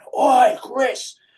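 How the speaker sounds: very high scream. Retelling a client calling across the gym floor: imitating a client screaming. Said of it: "screaming across the sh-, the, uh, gym floor".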